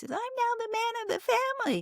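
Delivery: small, very high little voice. Recounting a man recalling his father's death at twelve, imitating his tiny voice. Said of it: "he had this little tiny voice".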